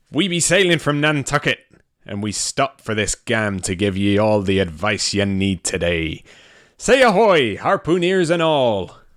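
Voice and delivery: put-on half-American pirate accent. Opening the show in character as a ship's crew: put-on old Nantucket pirate accent. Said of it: "the accent I was doing".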